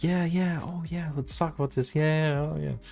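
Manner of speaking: put-on peppy, chipper voice. Retelling how the voice switched in the interview today: imitating own peppy phone voice.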